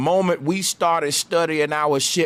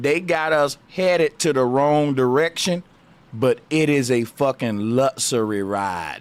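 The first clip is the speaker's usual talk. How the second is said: slow, deliberate, drawn-out delivery, word by word; 3 semitones lower than usual. Telling listeners the catch, the speaker repeats the point slowly. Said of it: "I'm finna say this slow".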